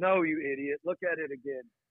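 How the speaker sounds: mock irritated, angry, scolding tone. Retelling how she corrected him about the ultrasound, mock-angry retort. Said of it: "like, angry".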